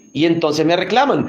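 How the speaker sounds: usual speaking voice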